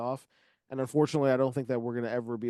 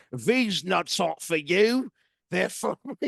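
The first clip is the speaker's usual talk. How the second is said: loud, slow, put-on Cockney accent; 7 semitones higher, 7 dB louder than usual. Speaker performs a line typed in the chat, trying a Cockney accent. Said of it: "try our best Cockney accent".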